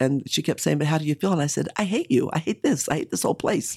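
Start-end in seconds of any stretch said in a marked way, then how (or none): 1.8-3.8 acted, upset outburst, high and swooping. Retelling her answer to a woman who kept asking how she felt, acting out past upset. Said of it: "And I was so upset".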